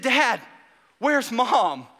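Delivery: acted panicky calling out. Father retelling his son calling to him out on the waves, imitating panic. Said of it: "he sort of had this panic in his voice".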